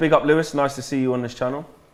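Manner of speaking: ordinary delivery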